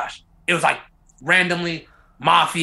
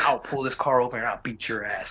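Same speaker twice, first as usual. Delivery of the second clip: put-on deep, quiet, menacing, heavy Russian accent; 5 dB quieter than usual. Retelling a man threatening the driver, in a strong Russian accent. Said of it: "strong Russian accent".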